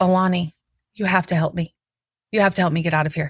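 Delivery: panicked pleading, freaking out. Retelling begging a friend for help to get out: retelling own panicked plea. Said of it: "I'm freaking out".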